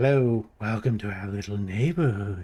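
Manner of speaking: creepy low voice. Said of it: "he's got a really creepy voice".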